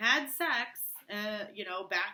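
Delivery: plain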